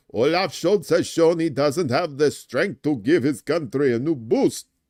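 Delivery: put-on vampire accent. Reading out Lindner's words to reporters about Olaf Scholz: Count Chocula voice. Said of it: "That kind of sounds like Count Chocula".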